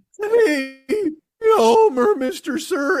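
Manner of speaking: very slow, squeaky, high-pitched cartoon voice. Speaker telling his buddy Paul about a young hockey player: squeaky voice guy from The Simpsons. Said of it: "the fucking squeaky voice guy from The Simpsons".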